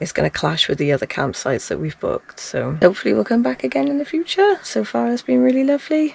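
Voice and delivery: hoarse, creaky, croaky, rough just-woken voice. Talking about travel plans on a morning walk, croaky morning voice. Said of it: "my voice is really croaky in the mornings".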